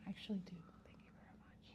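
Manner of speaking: very hushed, quick, breathy, rattled-off whisper. Answering whether one knows how to whisper: whispering. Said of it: "that's whispering".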